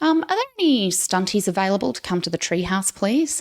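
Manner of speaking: very calm, perfectly composed, polite delivery. Speaker retells a call over the radio on the stunt channel: very calm voice. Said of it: "very calm voice".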